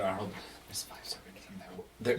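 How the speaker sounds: hushed, quiet whisper. After peering into a room, a character turns back to Arnold, whispering. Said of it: "I guess I need to talk up".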